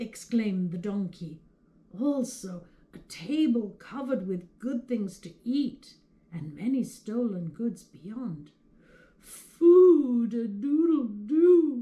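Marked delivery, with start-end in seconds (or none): 9.2-11.8 very loud, very slow, drawn-out crowing groan. The rooster responds to the donkey's report from the window, groaned. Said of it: "groaned the rooster".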